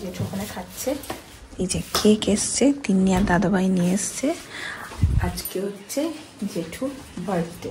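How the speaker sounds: quiet, secretive voice.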